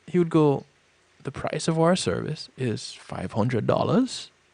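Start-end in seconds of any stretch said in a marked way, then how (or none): 1.2-4.2 rising, question-like pitch lift on dollars. Retelling how a man stated his price in pitch meetings, rising pitch on dollars. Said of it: "he wasn't stating his price, he was asking it".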